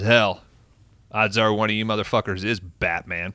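ordinary talk, nothing marked

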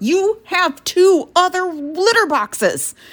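shrill, very high yell, slowly spelled out. Retelling how the cat kept coming in, imitating yelling at the cat. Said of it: "yelling at her".

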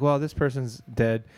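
ordinary talk

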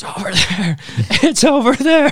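very high-pitched, panicked, freaked-out yell. Retelling trying to point out an elk to Dad: imitating own yell. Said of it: "I'm just trying to yell at Dad".

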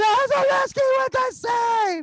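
very high, shrill, full-blast play-by-play commentator scream. Retelling how the play-by-play announcer calls a save: imitating commentator screaming. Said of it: "he would scream".

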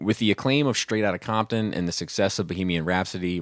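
ordinary talk, nothing marked

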